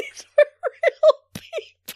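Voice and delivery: laughing hard and giggling, high and loud.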